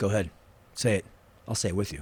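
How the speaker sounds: low, very quiet, dead calm, intimidating voice. Retelling a news interview, quoting a calm dare: imitating Delroy Lindo, calm and intimidating. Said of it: "'cause he's not yelling".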